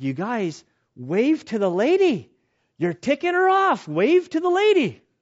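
mock frantic, loud, swooping, rising yell. Speaker acts out a man on the boat yelling at the group: retelling a yell. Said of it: "He starts yelling at us".

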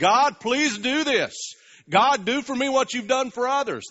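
acted very high, loud, begging plea. Describing people who cry out to God: imitating a pleading prayer. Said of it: "They plead with him".

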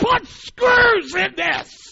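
acted, very high, shrill, enraged, furious scream. Retelling a rage after punching drywall, screaming at their brother in anger. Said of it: "I started screaming at my brother".

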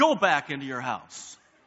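very stern, no-nonsense voice. Speaker retells what they told a man, retelling a stern command. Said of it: "I just looked at him with a very stern voice".

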